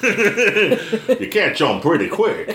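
very high, easygoing, super casual California surfer voice. Imitating a man from the Lord of the Rings behind-the-scenes footage, super casual Californian surfer dude. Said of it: "super casual Californian surfer dude".

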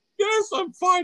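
very high voice, giggling through the words. Answering whether you are okay: laughing while talking. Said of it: "I'm laughing because you thought".

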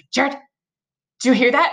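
put-on panicked voice. Recalling waking at night to a howling sound and asking him, reenacting past panic. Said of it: "I started kind of like panicking".

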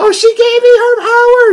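very high, shrill screaming voice. Act out a woman screaming that she was given power, imitating a shrill screaming voice. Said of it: "She's doing like a nice shrilly voice".

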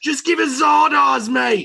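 put-on sweet, very high, drawn-out Australian accent. Quoting pirates who made a demand: Australian accent. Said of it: "They did it in a sweet Australian accent".

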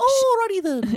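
very high, loud, squeaky goofy voice. Recalling doing impressions as a little boy to keep his mom laughing, high-pitched Ace Ventura impression. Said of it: "a high-pitched voice".

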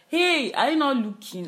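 high-pitched, loud shout. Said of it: "Somebody had to shout".

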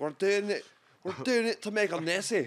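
put-on Scottish accent. Retelling the Jurassic Park story, speaker quotes John Hammond, John Hammond Scottish accent. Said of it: "That was a much better Scottish accent".

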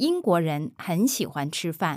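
smooth, natural, connected, unbroken phrase.

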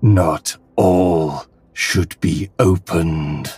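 big, grand, weighty, dramatic character voice. Voicing the presence that warns about the box, big booming voice. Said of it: "the big booming voice".

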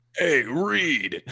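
rough, gravelly East Coast accent. Thanked for the character, the speaker shows how he does the Ben Grimm voice. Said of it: "East Coast accent and you get really gravelly".

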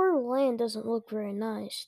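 ordinary delivery, nothing marked

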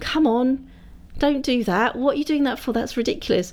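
high-pitched shouting. Recalling watching a tv drama, re-enacting shouting at the telly. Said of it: "I was like shouting at the telly going".

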